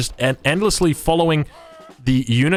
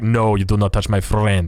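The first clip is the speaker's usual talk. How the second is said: put-on Russian accent, lower and slower; 5 semitones lower than usual. Commentating a game, voicing pikemen moving into position, russian accent. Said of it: "leave them as the Russian accent".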